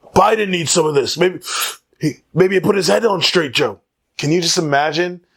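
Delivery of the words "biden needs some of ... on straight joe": put-on old politician voice, higher pitched. Imagining two people smoking together, doing a Bernie Sanders impression. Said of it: "that was my Bernie Sanders impression".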